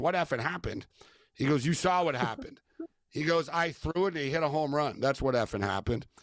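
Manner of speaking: plain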